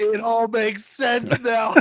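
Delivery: slow mock revelatory tone. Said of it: "and I was like".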